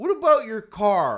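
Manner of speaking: loud, high, mock indignant voice.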